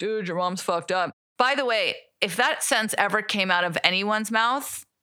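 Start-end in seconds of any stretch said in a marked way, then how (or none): none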